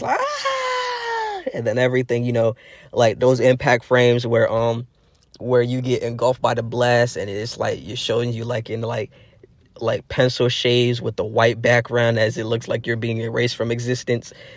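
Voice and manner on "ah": very high, piercing scream. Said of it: "that's when he screams".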